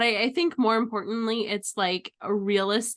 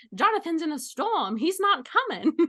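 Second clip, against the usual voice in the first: put-on old-Hollywood transatlantic accent, pitched higher; 7 semitones higher than usual. Pitching a scene where characters wait for Jonathan, transatlantic accent. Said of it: "everyone has a transatlantic accent".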